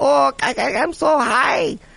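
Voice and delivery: very high, very slow put-on Chinese accent. Speaker imagining a person in China, Chinese accent impression. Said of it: "Chinese impression?".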